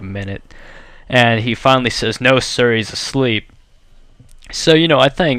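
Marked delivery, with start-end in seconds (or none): none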